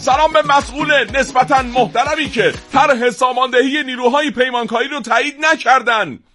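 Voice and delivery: furious, angry tone. Reading a requested message aloud, as asked, in an angry tone. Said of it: "با لحن عصبانی خوندم اینو".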